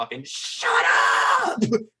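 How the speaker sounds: mock restrained half-yell. Retelling yelling at the screen from his chair: imitating his own yell, toned down. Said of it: "I just yell as loud as I can".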